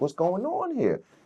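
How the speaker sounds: high, slow incredulous voice. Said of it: "I'm like".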